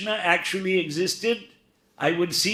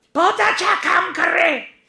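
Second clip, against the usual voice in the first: very high-pitched, raised, loud voice, speaking Hindi; 12 semitones higher, 7 dB louder than usual. Retelling a visit where pictures were shown, imitating Vinoba Bhave's high-pitched voice. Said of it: "he had a very high-pitched voice".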